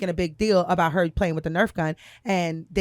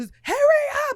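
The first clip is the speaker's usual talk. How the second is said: put-on screaming at a very high pitch; 4 dB louder than usual. Retelling a hysterical crying daughter urging to hurry: imitating a screaming girl.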